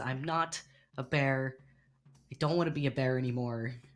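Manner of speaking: frustrated, annoyed muttering. Narrating a character stuck as a bear, saying it frustrated to himself. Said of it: "he says this kind of like to himself".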